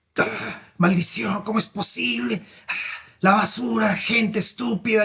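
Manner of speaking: mock, furious, grumbling angry outburst. Retelling an upset street sweeper cursing, imitating an angry yell.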